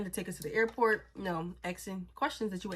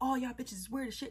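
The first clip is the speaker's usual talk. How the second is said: high-pitched, angry, snapping outburst; 5 semitones higher, 4 dB quieter than usual. Retelling how she was snapping at the speaker: imitating someone snapping angrily. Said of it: "She's, like, snapping".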